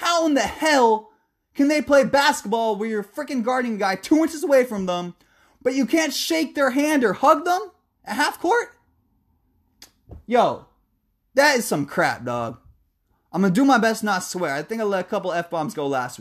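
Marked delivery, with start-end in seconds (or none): 0.0-12.6 heated, fed-up angry rant, pitched up. Ranting during the random topic of the day segment; angry rant. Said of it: "I was angry".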